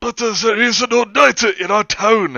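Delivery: loud, high-pitched voice. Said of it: "And my dad was like".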